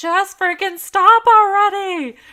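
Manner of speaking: very loud, very high, shrill, fed-up frustrated yell. Retelling yelling at goats that jump on them: imitating own yelling. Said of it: "I just start yelling at them".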